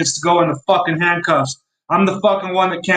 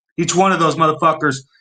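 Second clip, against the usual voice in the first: ordinary talk, nothing marked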